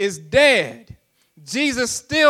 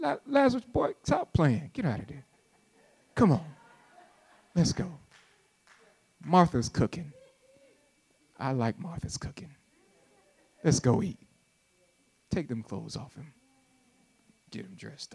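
casual put-on calm voice, lower and quieter; 8 semitones lower, 12 dB quieter than usual. Imitating Jesus calling Lazarus from the tomb without raising his voice. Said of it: "You think he raised his voice".

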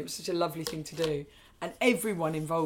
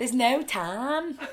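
loud Liverpudlian Scouse accent; 7 semitones higher, 5 dB louder than usual. Speaker repeats a phrase to show off an accent, Liverpudlian accent. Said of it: "That's my Liverpudlian accent".

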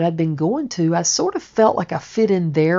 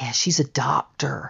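soft, hushed, gossipy whisper; 4 semitones lower, 6 dB quieter than usual.

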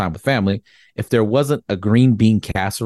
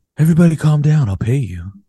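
nerdy character voice; 6 semitones higher, 3 dB louder than usual. Walking in to take pictures and calming people who flee, in a Napoleon Dynamite voice. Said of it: "why do you sound like Napoleon".

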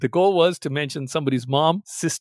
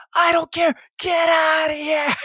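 mock very high, drawn-out scream at full lungs; 13 semitones higher than usual. Telling a high-school story, acting out a boy's reply: retelling a scream at full lungs. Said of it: "screaming at the top of his lungs".

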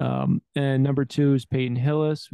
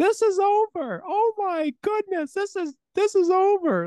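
put-on very high, drawn-out scream. Retelling a famous overtime run: imitating the guys screaming. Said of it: "the guys screaming".

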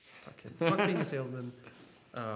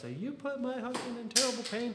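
put-on old lady scream, higher pitch; 10 semitones higher than usual. Retelling an angry customer's complaint: imitating an old lady screaming. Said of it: "She's screaming at him".

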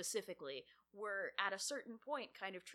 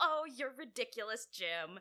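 put-on sassy character voice; 3 semitones higher, 7 dB louder than usual. Describing Kirk and Spock's low-stakes shenanigans, doing a sassy Spock impression. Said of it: "being all sassy and like".

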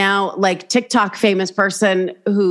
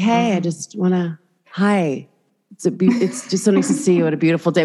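put-on weird eerie calm voice, slower. Retelling running into a woman at a grocery store, imitating her weird calm voice. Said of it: "she had this really like weird calm energy".

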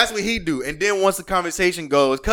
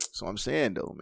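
hushed, breathy, low put-on deep voice; 10 semitones lower, 11 dB quieter than usual. Podcast banter about someone who gets into his deep voice: imitating his deep voice. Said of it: "he get into his deep voice".

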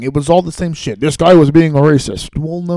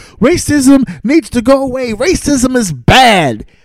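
mock high, slow bellow at the top of the lungs; 8 semitones higher than usual. Mocking people who repeat an obvious point: imitating people screaming. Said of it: "start screaming at the top of their lungs".

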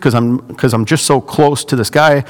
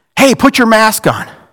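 mock, pitched-up, shouted yell; 8 semitones higher than usual. Speaker retells a man yelling across the store as he leaves, retelling a man's yell. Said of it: "he yells across Baby Cakes".

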